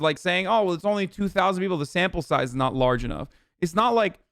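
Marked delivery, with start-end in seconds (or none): none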